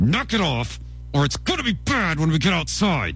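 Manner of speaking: through gritted teeth, clenched jaw, up close. Recalling what she would say when pushed too far, through gritted teeth. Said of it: "through gritted teeth she would say".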